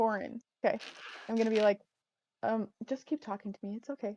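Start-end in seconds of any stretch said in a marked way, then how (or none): 2.4-4.2 hushed, said very quietly, quieter. Playing a character who quietly tells the counter clerk Torin to keep talking: said very quietly. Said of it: "really quietly".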